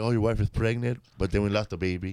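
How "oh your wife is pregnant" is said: ordinary talk, nothing marked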